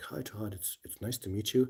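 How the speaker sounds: peaceful, serene, soft, calm zen-like voice. Retelling a phone call with a kid from Ontario, imitating a calm talker. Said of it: "he's really calm, and he's he talks like this".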